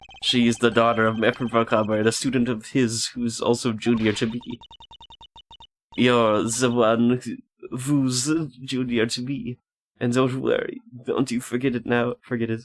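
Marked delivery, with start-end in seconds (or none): 6.0-12.6 put-on German accent. Voicing a visiting character's lines, in a german accent. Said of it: "Is that the German accent I was doing?".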